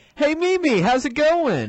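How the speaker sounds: high, bright, cheerful and chipper voice.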